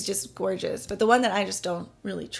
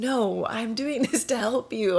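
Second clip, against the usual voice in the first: sanctimonious, self-righteous do-gooder villain tone; 2 semitones higher than usual. Imitating a villain who claims to help while stabbing: imitating a self-righteous villain. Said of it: "Not like this self-righteous".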